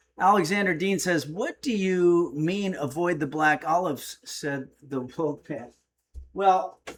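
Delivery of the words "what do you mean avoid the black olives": plain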